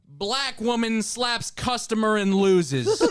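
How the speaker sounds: TV news anchor delivery. Recounting a local news story to friends, the speaker reads the headline in newscaster voice. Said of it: "Can I do the newscaster voice?".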